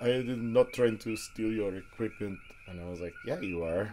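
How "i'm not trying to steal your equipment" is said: loud, exaggerated, laid-on Eastern European accent. Retelling an argument over the speaker's equipment, quoting the other man in Borat voice. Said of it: "in his Borat voice".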